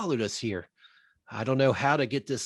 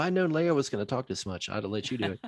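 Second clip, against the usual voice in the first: ordinary talk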